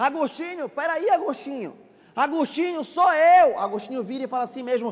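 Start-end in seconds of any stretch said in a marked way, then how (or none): 0.0-3.6 mock yelling, high, calling shout. Retelling a former lover calling out in the street: imitating a shout. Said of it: "e ela gritando".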